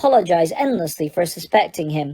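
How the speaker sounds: ordinary delivery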